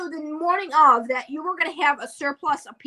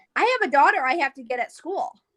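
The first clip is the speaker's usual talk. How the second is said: ordinary talk, nothing marked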